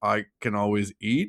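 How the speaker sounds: put-on robotic voice with a slight German accent. Imitating a game character saying its catchphrase: slight German accent robot voice. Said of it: "a slight German accent in this robo voice form".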